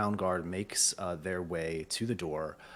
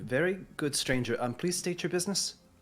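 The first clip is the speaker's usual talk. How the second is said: put-on higher-pitched young woman's voice; 9 semitones higher than usual. In a role-play, voicing a character greeting visitors: young woman's voice. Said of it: "you hear uh, a young woman's voice".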